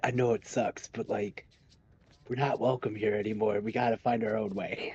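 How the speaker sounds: hushed whisper. In a game, leaning in to a fellow character's ear, whispering. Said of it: "lean in and whisper into his ears".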